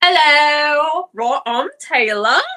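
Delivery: clumsy fake British accent, "hello" drawn out. A podcast co-host introduces themself at the start of the show, bad british accent. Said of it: "my bad British accent".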